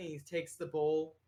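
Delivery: normal talking voice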